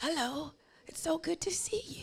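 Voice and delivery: soft, restrained, reserved, mild-mannered voice. Acting out a quiet family greeting relatives at a reunion: imitating a quiet family. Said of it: "everybody quiet".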